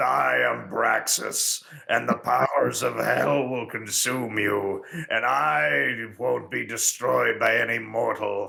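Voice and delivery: rough, dumb, creaky monster voice, word I drawn out. Mocking how Braxus speaks perfect English, in his big dumb monster voice. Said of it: "in his big dumb monster voice".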